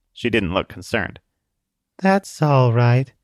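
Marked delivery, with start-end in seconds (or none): 2.0-3.1 tired, weary, almost monotone delivery. A young girl answers a man's warning about a sniper rifle, weary monotone. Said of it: "Her voice sounded almost monotone. Not robotic, just weary".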